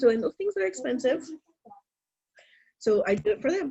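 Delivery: tearful voice, speaking through tears while crying. A parent talking about buying things for their kids; crying. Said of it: "I'm sorry, I'm crying".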